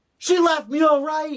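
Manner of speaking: very high, very loud, shrill full-volume screech. Retelling a movie scene where a character screams at the groom's brother: imitating someone screaming.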